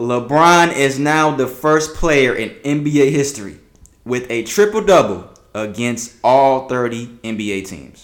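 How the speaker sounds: slow, loud, drawn-out deliberate reading. Reading a basketball record aloud to the others, reading slowly. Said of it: "Let me read this slowly".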